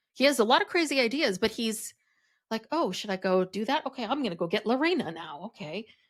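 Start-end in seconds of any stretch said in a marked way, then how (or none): 2.7-5.8 put-on unsure, self-doubting voice. Imitating Garrick, who doesn't seem very self-assured: imitating Garrick sounding unsure. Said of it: "he doesn't seem very self-assured".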